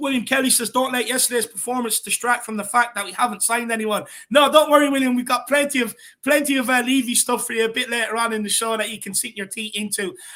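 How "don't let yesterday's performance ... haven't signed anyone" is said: normal talking voice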